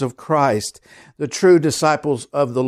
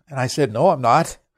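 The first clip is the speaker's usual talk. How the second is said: plain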